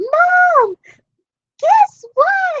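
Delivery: mock hollering, very high, excited, words drawn out. Speaker retelling hearing favorite artists came to their city, calling to Mom: retelling an excited scream. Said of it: "I was hollering, I was screaming".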